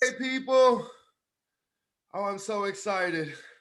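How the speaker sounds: out of breath. Greeting listeners after running up the stairs, out of breath. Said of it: "You sound a bit out of breath".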